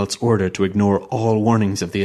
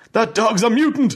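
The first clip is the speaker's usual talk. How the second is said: very high, gasped-out exclamation; 14 semitones higher than usual. A narrator reads a man's line in a story, gasping. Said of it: "he gasped".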